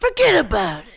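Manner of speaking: loud, high, angry character voice. Voicing the cat Leroy as Rex from Rex Kwon Do. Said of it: "he could be Rex from Rex Kwon Do".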